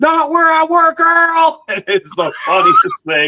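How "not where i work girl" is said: put-on very high, piercing, shrill scream. Retelling what a bar manager screamed during a fight, retelling a scream. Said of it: "the manager literally screamed".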